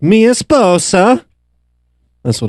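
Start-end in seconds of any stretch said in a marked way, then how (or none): 0.0-1.2 very high, squeezed-out Spanish dubbed voice. Podcast host joking about Borat quotes, doing a Spanish Borat impression. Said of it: "I do Spanish Borat".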